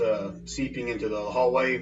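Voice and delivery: ordinary talk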